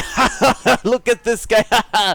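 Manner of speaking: acted-out, very loud, high, booming, drawn-out talk-show host laugh. Retelling a talk show host mocking a guest: imitating Maury Povich laughing. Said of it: "and then he's like".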